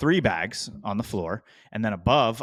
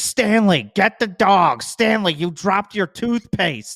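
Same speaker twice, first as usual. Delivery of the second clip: very high, shrill, harried scolding shout; 10 semitones higher, 7 dB louder than usual. Retelling a wife on a plane yelling at her husband: imitating a wife yelling. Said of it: "his wife was yelling at him the whole time".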